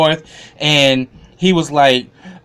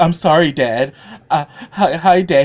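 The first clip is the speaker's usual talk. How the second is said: slow, stammering, stumbling over words; 2 semitones higher than usual. Recapping an episode, acting out a son begging his father: imitating Jim pleading. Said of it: "he's pleading like".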